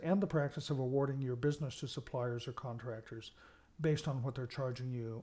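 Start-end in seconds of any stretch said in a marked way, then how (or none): none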